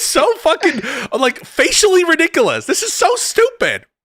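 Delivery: worked up. In a heated discussion with another speaker, worked up. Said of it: "getting so worked up".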